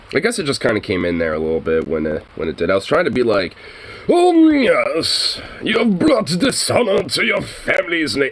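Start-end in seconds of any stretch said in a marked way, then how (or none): 4.0-8.3 lofty, posh knight voice, slow, pitched up, yes stretched. Explaining a voice attempt that came out wrong, quoting it; posh medieval knight voice. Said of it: "some poshy fucking like medieval knight guy".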